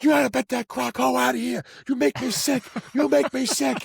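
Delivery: very high, raspy, rough screaming, acted out. Storyteller quoting a woman screaming at a man, imitating someone screaming. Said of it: "she's just like screaming at".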